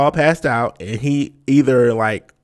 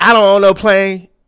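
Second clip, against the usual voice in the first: sudden, high, loud yelled outburst; 8 semitones higher, 6 dB louder than usual. Telling about a court case, quoting the defendant in court; retelling a yell. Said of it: "he yelled out in court like".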